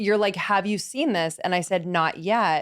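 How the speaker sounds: usual speaking voice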